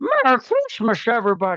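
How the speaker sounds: put-on high old-movie voice with wide, swooping pitch swings. A speaker announces, then tries, a Jimmy Stewart impression. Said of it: "I'm gonna do my my best at Jimmy Stewart".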